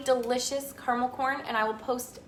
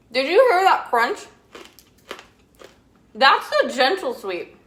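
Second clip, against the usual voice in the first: mouth full, speaking while chewing, louder; 10 dB louder than usual. Showing a snack recipe, the speaker tastes it and talks with their mouth full. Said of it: "Don't talk with your mouth full".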